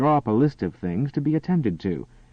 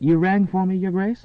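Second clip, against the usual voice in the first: playful, teasing, pitched-up mock-servant voice; 8 semitones higher than usual. Reading a romance novel aloud, a woman greeting a duke: teasing. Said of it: "said teasingly".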